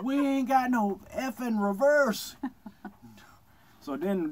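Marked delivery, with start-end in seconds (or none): 0.0-2.4 mock shouting, much higher pitch. Recounting the boat mishap as people came out of their boats, retelling a yell. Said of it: "I yelled".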